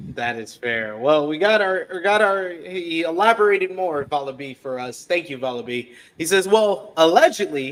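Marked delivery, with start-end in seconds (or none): 6.4-7.7 allegedly stressed, said louder. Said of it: "emphasis on allegedly".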